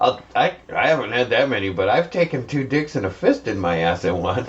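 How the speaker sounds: plain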